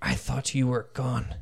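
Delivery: very low, quiet voice with a serious, grave tone. A game narrator voices a character recognizing a player, in a low, quiet, serious voice. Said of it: "she says in a very low, quiet, serious voice".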